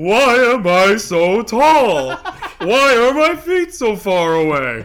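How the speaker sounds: high, booming, very loud, very slow dopey bellow. Joking about a wrestler who does big dumb things: Giant Silva voice. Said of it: "That's my Giant Silva voice".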